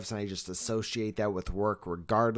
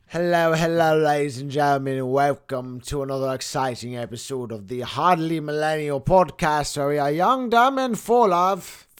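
very loud, high, horrible put-on English accent; 5 semitones higher, 9 dB louder than usual. A podcast host opens an episode, horrible English accent. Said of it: "enough of my horrible English accent".

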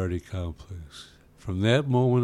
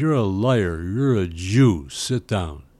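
put-on malicious tone, louder, slower; 5 dB louder than usual. Retelling a woman's reply to his answer about his background, imitating a malicious remark. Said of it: "Very maliciously".

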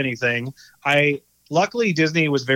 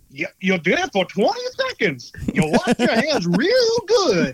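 put-on creepy old-man voice, weird swooping sing-song; 9 semitones higher than usual. Speaker retells what a staring, smiling old gentleman said to them, in a weird old man voice. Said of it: "I heard this weird voice of like".

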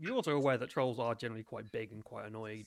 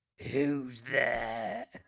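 put-on loud, aged, crackly, stone-like voice; 6 dB louder than usual. A voice from inside a cave answers a knock: old, crackled, stone-like voice. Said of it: "an old, crackled, almost stone-like voice".

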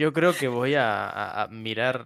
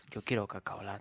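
hushed, very quiet whisper; 9 dB quieter than usual. Retelling asking a father for cocoa: retelling a whispered request. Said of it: "le digo a mi padre en voz baja".

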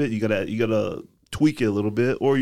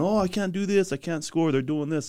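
weepy, upset crying, pitched up; 6 semitones higher than usual. Showing players film of their post-game reaction: imitating a crying player. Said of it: "you over here crying, saying".

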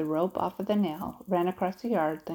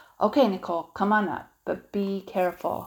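cautious tone, slower pace; 3 semitones higher, 4 dB louder than usual. He calls to a girl who is about to climb up toward him, cautioning. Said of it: "Jasper cautioned".

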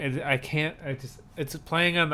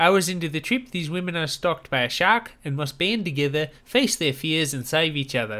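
put-on New Zealand accent with Kiwi vowels; 3 dB louder than usual. Reading a film's plot summary aloud: New Zealand accent. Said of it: "I'm doing a New Zealand accent".

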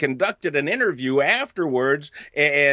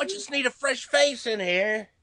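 very high, put-on British accent; 9 semitones higher, 3 dB quieter than usual. Joking about needing help in a restroom, put-on British accent. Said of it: "that was British".

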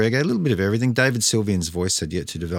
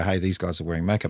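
ordinary talk

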